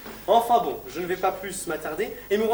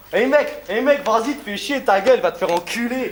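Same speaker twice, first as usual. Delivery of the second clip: very loud, hostile, aggressive yelling; 3 semitones higher, 8 dB louder than usual. Varying the tone as an example, announced as aggressive: aggressive, hostile tone. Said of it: "Tenez, agressif".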